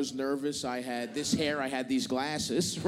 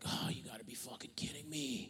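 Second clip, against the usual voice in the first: mock mutter under the breath, much quieter and lower; 3 semitones lower, 13 dB quieter than usual. Retelling a flight check-in clash with an agent, muttering under breath. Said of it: "Right under my breath".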